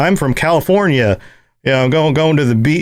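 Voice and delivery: bad, wrong put-on California accent. Imitating how people abroad imagine a californian: bad california accent. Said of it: "that's not the right accent".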